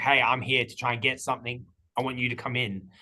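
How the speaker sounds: mock-robotic put-on delivery. Giving feedback to Jimmy on how his script came off, imitating Jimmy's robotic delivery. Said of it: "sounding like a bit robotic".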